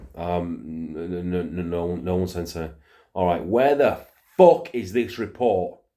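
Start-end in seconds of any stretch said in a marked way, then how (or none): 0.9-2.7 put-on mumbling, stammering stutter. Retelling own panicked reply to a boss on the phone: imitating own mumbling stutter. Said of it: "mumbling, stuttering me".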